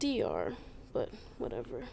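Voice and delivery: sounding sad. Answering another speaker's question about where you're from, sounding sad. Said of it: "Why did you sound so sad to say that?".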